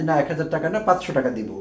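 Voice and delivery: ordinary talk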